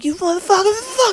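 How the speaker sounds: mock very high screaming outburst. Retelling a neighbor's fight heard through the floor: imitating a woman screaming. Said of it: "they're just screaming at each other".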